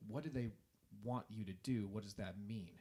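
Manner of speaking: ordinary talk, nothing marked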